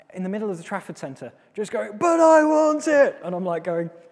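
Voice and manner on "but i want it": put-on very high, very slow, drawn-out child's tantrum scream. Parent retelling a tantrum in the Trafford Centre, imitating Josh screaming. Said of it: "screaming at the top of his voice".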